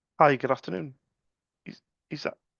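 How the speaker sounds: voice failing in the throat. Greeting Mary after waiting five minutes to speak to her: voice catching in throat. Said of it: "I caught in my throat".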